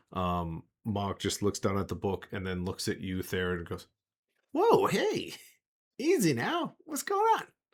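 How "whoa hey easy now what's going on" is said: very high-pitched, squealing little voice. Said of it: "his voice goes back to its high-pitched squealiness".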